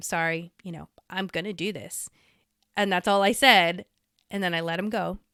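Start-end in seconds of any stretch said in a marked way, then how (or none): 0.0-2.1 put-on whisper, lower and quieter. Retelling what was said to a friend before betraying him: retelling a whisper. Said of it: "I had to whisper to him".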